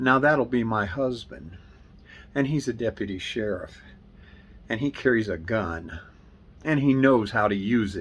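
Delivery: ordinary delivery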